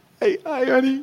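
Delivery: acted, very loud, very high hysterical crying and sobbing. Speaker retelling how she greeted him when he was terrified, imitating her crying hysterically. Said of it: "she's crying hysterically".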